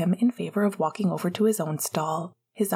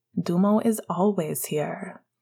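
ordinary delivery

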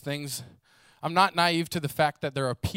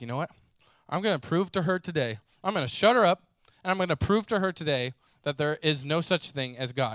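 plain

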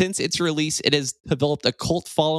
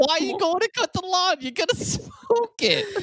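put-on Brooklyn accent, pitched very high. Quoting a line from an 80s movie, Brooklyn accent. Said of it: "why do they have Brooklyn accents?".

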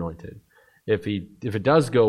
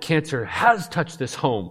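mock emphatic, firm, forceful, high-pitched delivery; 6 semitones higher than usual. Retelling a wife hitting the table and speaking up: imitating wife's forceful outburst. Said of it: "crying her little fist, you know, on the table".

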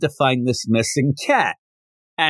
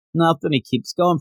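ordinary talk, nothing marked

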